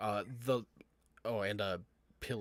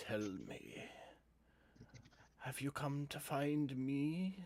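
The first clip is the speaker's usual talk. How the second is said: high, mutated, corrupted monster voice; 5 semitones higher than usual. Voicing a corrupted figure suspended in a cave: corrupted creature's voice. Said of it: "that voice comes out of it again".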